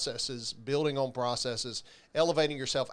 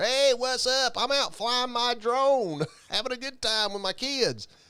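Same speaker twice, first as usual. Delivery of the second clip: put-on very high, pitched-up southern accent and vernacular; 9 semitones higher, 4 dB louder than usual. Retelling a phone call, the speaker imitates a plumber friend's reply in a Southern accent. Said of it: "in his southern vernacular".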